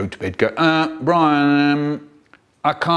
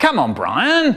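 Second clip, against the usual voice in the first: a bit cross, fraying patience, pitched up; 7 semitones higher than usual. Retelling the dad calling to the kids inside, imitating him getting a bit cross. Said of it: "getting a bit cross".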